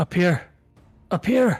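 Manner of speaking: yelling, shouting. Calling out in character to someone coming to find them: yelling. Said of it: "Stop yelling, Doc".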